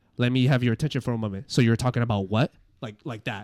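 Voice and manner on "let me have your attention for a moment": calm, assertive put-on voice, louder. Showing another reader how to deliver the line: calm assertive Alec Baldwin voice. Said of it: "like assertive".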